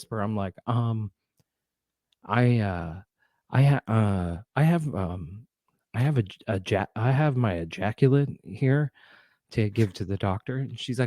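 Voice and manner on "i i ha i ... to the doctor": whispered voice. Retelling asking at a crowded clinic desk: retelling a whisper. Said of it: "And I'm trying to whisper".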